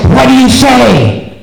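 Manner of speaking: loud stage whisper. Retelling a child's grandmother prompting him at the door, in a loud whisper. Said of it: "his grandmother in a loud whisper says".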